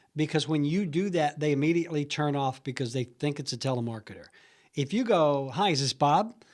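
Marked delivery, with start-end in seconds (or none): 5.5-6.3 very friendly, casual, conversational. Demonstrating how to open a phone call to Bob, very friendly, conversational. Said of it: "Very friendly, very conversational".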